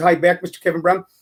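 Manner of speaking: normal talking voice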